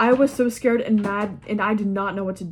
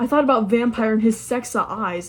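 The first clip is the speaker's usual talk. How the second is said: ordinary delivery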